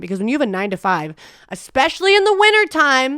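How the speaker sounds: worked-up, building anger. A youtuber talking about their life now, getting angry. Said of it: "sorry, I'm getting angry".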